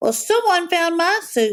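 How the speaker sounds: very high, squeaking voice. Reading the bear story aloud, the narrator voices Baby Bear high and squeaky. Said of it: "sputtered Baby Bear with a high squeaky voice".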